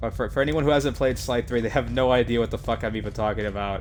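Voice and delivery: ordinary talk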